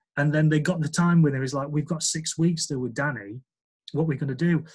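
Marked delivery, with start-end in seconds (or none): none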